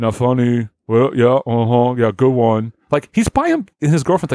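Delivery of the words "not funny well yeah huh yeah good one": mock drunken muttering. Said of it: "muttering under his breath".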